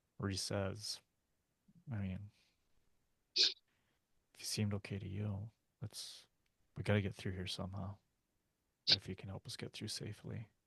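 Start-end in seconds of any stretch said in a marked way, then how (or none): 2.0-10.5 character whisper, much quieter. Player huddled with the group speaks as Reese, whispering. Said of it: "I know your character is whispering".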